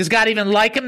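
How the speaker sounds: ordinary talk, nothing marked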